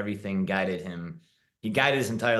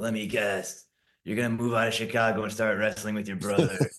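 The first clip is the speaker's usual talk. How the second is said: put-on gravelly, raspy voice. Recalling the girlfriend's reply when told they needed to talk; imitating gravelly voice. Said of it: "she had a really gravelly voice".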